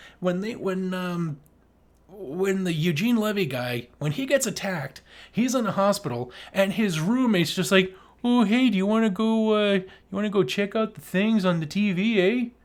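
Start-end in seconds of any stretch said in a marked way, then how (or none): 8.2-12.5 put-on Canadian voice, higher. Retelling what a hospital roommate in a film said: Doug McKenzie voice. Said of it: "It's like he's fucking Doug McKenzie".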